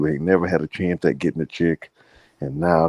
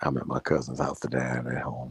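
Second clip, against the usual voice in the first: hushed whisper, lower and quieter; 4 semitones lower, 8 dB quieter than usual. Explaining that people sleep in the next room: whispering. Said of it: "I'm whispering".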